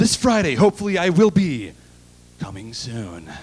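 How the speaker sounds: dramatic blockbuster movie trailer narrator voice. Imagining the trailer voice guy hitting on a girl in a bar: movie trailer voice guy. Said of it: "can you imagine how he would hit on her".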